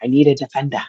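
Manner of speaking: put-on English accent. Retelling a phone call from a former coach, imitating Don Tobin's English accent. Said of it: "in his his English accent".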